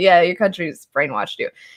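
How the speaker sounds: cheeky, sassy comeback tone. Retelling what a foreign student in the book says: imitating a sassy student. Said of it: "And he's all sassy".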